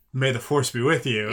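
ordinary delivery

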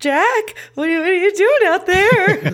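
play-acted very high, trembling, frightened voice. Describing a film character's voice, quoting her line, imitating a shaking, scared voice. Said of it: "Like her voice is shaking".

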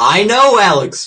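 very loud, high-pitched shouted voice.

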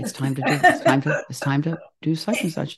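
loud stage whisper. Retelling how Karen is heard in the background: imitating Karen whispering. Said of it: "kind of whispering".

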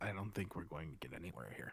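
low, very quiet half-whisper. Tabletop player's character leans into another character's ear and half-whispers. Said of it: "just kind of whisper".

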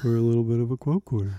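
mocking show-off tone. Mocking another speaker's line: imitating a peacocking tone. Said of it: "'cause that's your tone".

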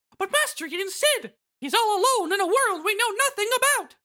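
high-pitched cartoon mouse voice. Taking Mickey Mouse's line while reading through a story scene, Mickey Mouse voice. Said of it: "Mickey says".

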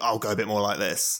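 laddish voice. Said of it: "in a group of guys who I would think are a bit more laddie".

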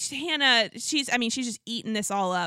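ordinary talk

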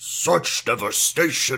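low, threatening villain voice. Recalling a message someone sent the group: Steppenwolf voice. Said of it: "in Steppenwolf voice or something".

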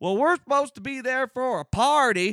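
put-on thick, heavy country accent, very high pitch. Quoting someone who went on and on, in a thick country accent. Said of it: "in this just thick-ass country accent".

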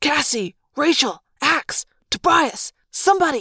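high hiss. Narrator calls to his friends as the jaguar's eyes close, hissed. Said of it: "I hissed".

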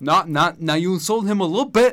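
very loud theatrical delivery. Quoting a movie bar scene line by line: De Niro line reading. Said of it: "Every De Niro line reading in Goodfellas".

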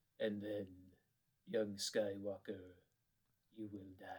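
low, dropped, deep villain voice. Doing quick voices on request: Emperor voice. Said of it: "The Emperor".

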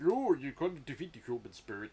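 belted, deliberately botched, off-the-mark acting voice. Listing an actor's films, then briefly quoting his line: terrible Topol impression. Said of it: "that's a terrible impression".

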